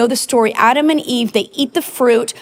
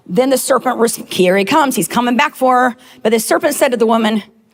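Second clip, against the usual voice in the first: ordinary talk, nothing marked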